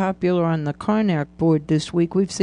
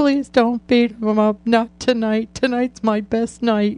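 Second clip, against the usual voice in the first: mock near-crying, near-tearful pleading tone, higher; 4 semitones higher than usual. Speaker recalls pleading with the listener's group, retelling almost-crying plea. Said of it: "almost crying and saying".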